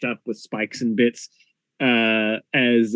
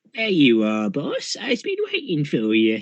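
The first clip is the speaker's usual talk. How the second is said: tiny, sing-song little goblin creature voice; 4 semitones higher than usual. Narrator voicing a small goblinoid creature greeting its boss, tiny goblin creature voice. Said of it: "You hear a tiny voice".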